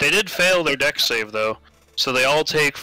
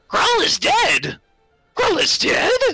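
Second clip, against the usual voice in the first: very high, shrill, swooping goblin yell from afar; 3 dB louder than usual. Storyteller voices one of a group shouting back from a distance; yelling back from afar. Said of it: "you hear one voice yell back here".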